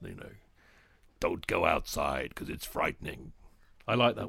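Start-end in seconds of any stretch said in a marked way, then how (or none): 0.0-3.3 very deep, rough, menacing American trailer narration voice. Remembering old cinema ads, imitating a deep menacing trailer voice. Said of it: "the really deep, menacing American voice".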